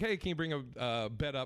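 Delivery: ordinary talk, nothing marked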